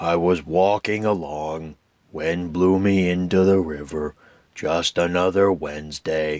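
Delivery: low, gloomy, glum donkey voice. Speaker attempts Eeyore's voice after admitting it can't be done justice, Eeyore voice. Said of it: "I can try, though".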